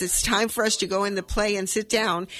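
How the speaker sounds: ordinary delivery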